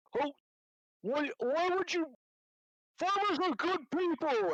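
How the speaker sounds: furious, high-pitched, angry yell. A player voicing their character in a game, yelling at another: yelling angrily. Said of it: "I'll kind of yell like".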